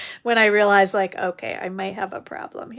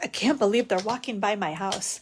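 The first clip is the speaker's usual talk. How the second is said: put-on huffy complaining tone; 4 dB quieter than usual. Speaking for him as people walk by the house: imitating a huffy grumble. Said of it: "he gets all huffy".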